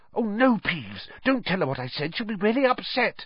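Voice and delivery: very high, panicky, urgent, frantic half-whisper. Narrator reads Hermione's line to Peeves as a frantic half-whisper. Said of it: "Hermione whispered frantically".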